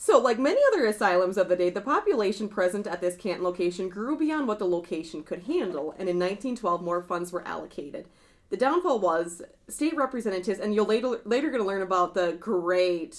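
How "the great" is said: mocking, dripping sarcasm. Talking about a state representative while recounting asylum history, sarcastic. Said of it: "and I say that very sarcastically".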